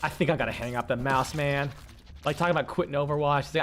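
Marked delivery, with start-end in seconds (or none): 0.0-1.7 mock totally relaxed, chilled-out, easygoing delivery. Retelling a player quitting Overwatch after a bad game: retelling a chilled-out voice. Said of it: "chilled-out voice ever".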